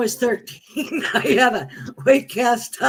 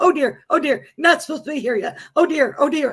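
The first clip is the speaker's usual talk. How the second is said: put-on bumbling angel voice; 4 semitones higher than usual. Retelling what an angel said after crossing over, imitating a bumbly angel. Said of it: "she was like a bumbly angel".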